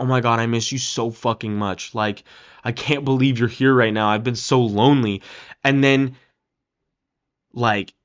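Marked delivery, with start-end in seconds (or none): 0.0-5.2 put-on crying voice. Retelling a movie scene where Tom hugs her: imitating Tom crying. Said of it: "is hugging her and crying his eyes out, and he's like".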